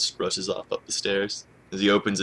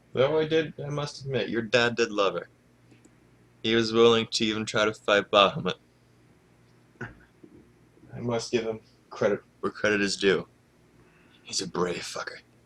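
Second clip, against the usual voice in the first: put-on audible grin through every word, chatty drunk voice; 3 semitones higher than usual. The guild drunk talks to Jen about her dad, with an audible grin. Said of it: "[name] speaks with with the guild drunk, [name], about something he overheard at the end of session #2 in a short RP session. / You can hear the grin in his voice. / You can hear the grin in his voice".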